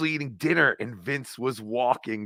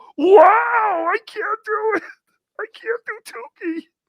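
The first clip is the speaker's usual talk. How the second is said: very high, strangled, squeezed squeal with "wow" stretched out; 6 dB louder than usual. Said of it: "It's like Tukey's being strangled".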